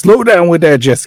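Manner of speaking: full-on loud, high yell, carrying far. Yelling at boats going too fast in a shipping port: yelling. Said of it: "I'm yelling at the boats that are going too fast".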